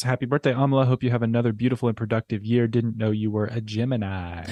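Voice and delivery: plain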